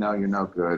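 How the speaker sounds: ordinary talk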